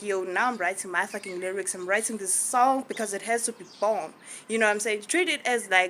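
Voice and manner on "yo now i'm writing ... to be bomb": ordinary talk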